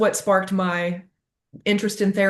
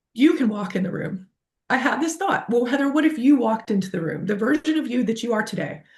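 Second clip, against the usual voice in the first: tearful, moved, on the verge of crying; 3 semitones higher than usual. Telling listeners about a thought on revisiting an old memory, close to tears. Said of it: "I'm gonna cry. It still gets me".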